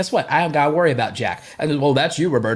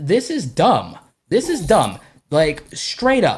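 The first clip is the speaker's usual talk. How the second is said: fed-up, heated, genuinely mad rant; 3 semitones higher than usual. Telling the listener he is heated about this: legitimately mad. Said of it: "I'm legitimately mad".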